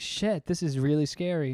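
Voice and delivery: ordinary talk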